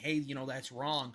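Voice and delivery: ordinary talk, nothing marked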